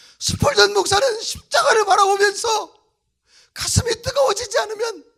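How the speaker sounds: loud, high wailing and sobbing.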